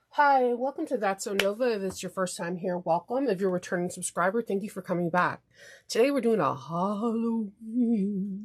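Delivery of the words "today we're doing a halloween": slow, eerie, spooky voice. Host opening a Halloween episode, announcing today's topic in a spooky voice. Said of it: "I hope that sounded spooky".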